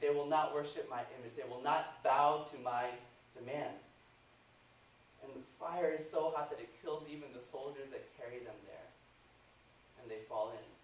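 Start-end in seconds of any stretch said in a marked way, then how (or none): none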